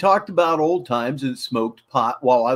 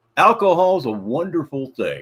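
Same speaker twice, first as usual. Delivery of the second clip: heavy, dry sarcastic tone, strongly ironic. Commenting after telling of a near-fatal drunk crash: sarcastic. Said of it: "I'm being sarcastic".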